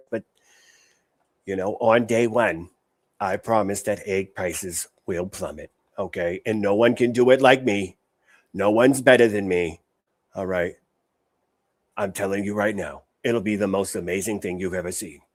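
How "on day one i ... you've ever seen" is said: put-on old New Jersey lady voice, bad politician impression. Doing an admittedly weak impression of Trump: Trump impression. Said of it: "My Trump impression is not the best".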